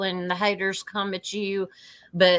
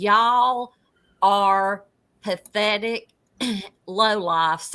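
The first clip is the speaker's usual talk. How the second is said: ordinary talk, nothing marked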